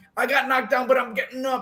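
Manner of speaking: petulant tantrum outburst. Describing a boxer's reaction after being knocked down: imitating Berlanga's tantrum. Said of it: "That's like a tantrum".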